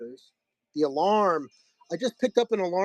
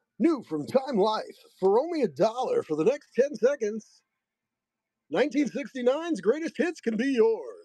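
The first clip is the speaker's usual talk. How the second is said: pitched-up TV-commercial announcer delivery; 6 semitones higher than usual. Pitching a compilation CD set on stream, in an announcer voice. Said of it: "that's my announcer voice".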